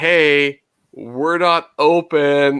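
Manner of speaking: very slow call-out with long drawn-out "hey". Retelling how employees told the waiting cars they were closed: imitating someone yelling. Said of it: "he's, like, yelling it to everybody".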